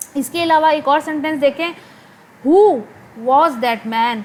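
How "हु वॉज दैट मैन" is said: who strongly stressed, rest falls lower. In an English sentence-intonation lesson: stress on who, then falling. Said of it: "अब वॉज दैट मैन जो है वो नीचे जा रहा है".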